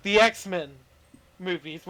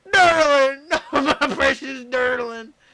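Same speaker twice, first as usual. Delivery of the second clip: high, loud, slow, drawn-out cartoon cop character voice; 6 semitones higher, 5 dB louder than usual. Retelling the scene where Durlin gets frozen, imitating the Gravity Falls cops. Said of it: "and they're like".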